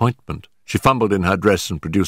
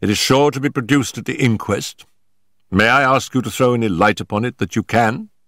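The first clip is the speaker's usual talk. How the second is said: plain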